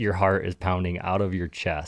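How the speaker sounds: ordinary delivery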